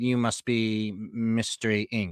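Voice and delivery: eerie, creepy butler character voice. Voicing a butler who comes up out of the woods to greet the group: creepy butler voice. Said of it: "a s- creepy butler out of the out of the woods".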